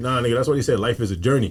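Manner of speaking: plain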